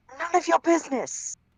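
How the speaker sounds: heated, hot delivery, pitched very high. Voicing a character answering a question: hotly. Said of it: "as Aroden hotly says".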